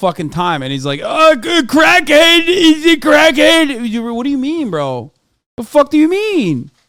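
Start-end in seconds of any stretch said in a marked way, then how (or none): 1.0-3.9 very high, loud, slow jaw-gumming speech. Mocking a man who calls others crackheads: imitating someone gumming while talking. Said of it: "he's gumming".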